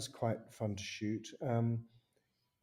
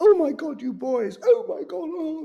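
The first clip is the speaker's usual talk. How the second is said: high, loud shrieking. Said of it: "came in shrieking".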